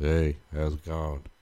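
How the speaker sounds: put-on flat, unexcited delivery. Podcast host recalls how last week's episode opened: mock-flat unexcited greeting. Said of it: "we're just kind of like".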